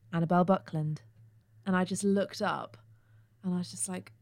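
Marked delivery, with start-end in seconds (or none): 0.1-1.0 mock deep man's voice, much lower. Speaker retelling how a man called out in the waiting room, deep voice. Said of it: "he just said in his deep voice".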